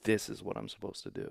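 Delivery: ordinary talk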